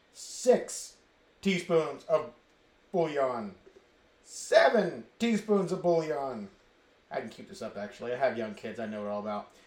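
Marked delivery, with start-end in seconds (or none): 0.2-6.5 put-on kids' TV puppet character voice. Counting spoonfuls into the pot, doing the Count from Sesame Street voice. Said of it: "I feel like, uh, the Count on Sesame Street".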